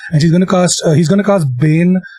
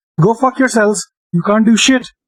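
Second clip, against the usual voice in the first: high, projected call in a put-on character voice; 6 semitones higher than usual. A player staying inside the wagon during a game turn, yelling at the goblins. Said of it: "I'm just gonna yell out at the goblins".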